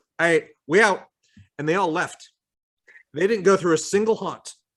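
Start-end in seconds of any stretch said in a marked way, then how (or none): 0.2-1.1 put-on loud, blunt, sassy, dismissive attitude. Retelling a visitor who is all attitude, imitating a visitor with attitude. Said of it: "She's like".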